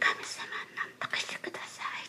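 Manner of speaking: very soft, nearly silent whisper. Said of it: "私は心の中でね".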